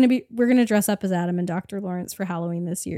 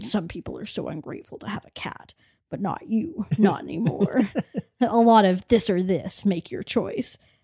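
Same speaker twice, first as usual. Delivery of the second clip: whispered horror-villain voice. Showing how they've been saying everything lately, Jigsaw voice. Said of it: "We've been saying everything in the Jigsaw voice".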